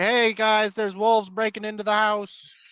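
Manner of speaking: shrill, very high, loud yell. In a tabletop game, the player's character alerts the group; yelling a warning. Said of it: "I'm gonna start yelling".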